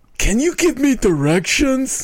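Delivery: very high-pitched, lazy cartoon cat voice. Describing a Garfield strip to the group, voicing Garfield's thought in Garfield voice. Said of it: "That's Garfield's voice".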